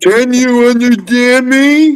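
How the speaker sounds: acted, drawn-out, very slow, very high-pitched shouting. Retelling how coworkers began talking after learning of deafness: imitating coworkers shouting. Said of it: "they start shouting at me".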